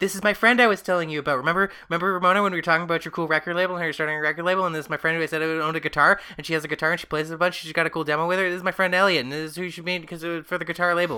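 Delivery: manic, rattled off, high and fast babble.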